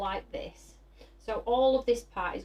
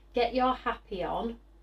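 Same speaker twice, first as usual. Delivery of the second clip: usual speaking voice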